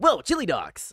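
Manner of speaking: high, loud cartoon-character exclamation. Answering a request to do Sonic: Sonic voice. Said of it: "Can you do Sonic?".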